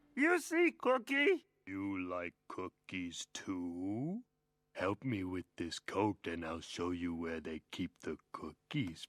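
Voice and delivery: very scary, menacing voice. Asking for help with a coat: very scary voice. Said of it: "you sound very scary".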